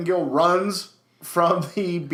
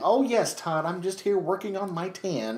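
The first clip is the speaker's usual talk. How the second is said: put-on soft-spoken old-lady voice; 5 dB quieter than usual. Recapping Mero and Sable acting as a boring young couple, Sable sounding like an old lady. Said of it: "She even sounded like an old lady".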